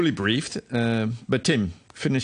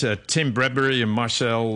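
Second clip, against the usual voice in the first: normal talking voice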